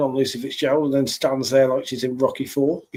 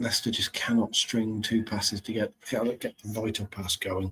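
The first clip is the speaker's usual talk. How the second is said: hushed, tense voice, lower and quieter; 4 semitones lower, 8 dB quieter than usual. Commentating on a tense late stage of a match: lowered, quiet voice for tension. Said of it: "my voice has dropped to keep the tension going".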